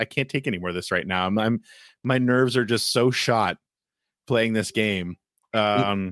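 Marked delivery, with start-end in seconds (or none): none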